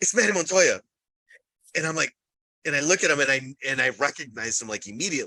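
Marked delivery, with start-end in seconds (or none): 0.0-0.8 mock loud drunken whisper, higher. Retelling how a tipsy companion loudly pointed someone out: imitating a loud drunken remark. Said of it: "she says it really loud because we're both intoxicated".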